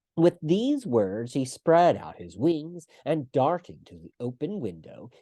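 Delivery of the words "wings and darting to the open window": ordinary delivery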